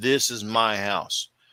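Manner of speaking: firm, pressing, very emphatic, insistent tone. Recounting what a man told him, imitating his emphatic insistence. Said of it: "Very, very emphatically, he's like".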